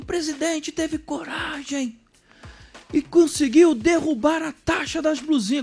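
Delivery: very high voice, on the verge of tears. Speaker mocks Lindenberg's post online, mock-tearful Lindenberg imitation. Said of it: "quase que chorando e dizendo".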